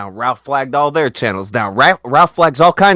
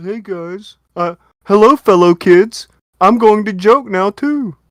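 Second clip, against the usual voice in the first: high, derisive mocking voice; 7 semitones higher than usual. Imitating someone joining the joke: mock imitation of someone. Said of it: "He's like".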